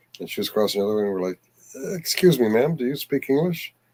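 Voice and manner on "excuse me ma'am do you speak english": timid, uncertain, nervous, hesitant delivery. Retelling asking a stranger on a bridge for help: imitating nervous asking. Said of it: "So we very nervously asked".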